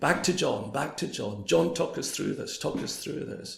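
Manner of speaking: normal talking voice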